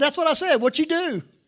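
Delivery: put-on very loud, high-pitched country boy accent. Retelling what a man said back to him, in a country impression. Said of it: "Let me do my best country impression of this guy".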